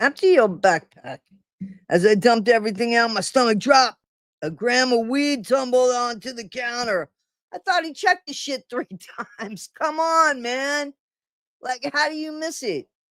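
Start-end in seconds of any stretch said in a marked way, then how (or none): 0.0-1.2 put-on Australian accent. Retelling how a woman at a counter gave him an order, Australian accent. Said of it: "in an Australian accent".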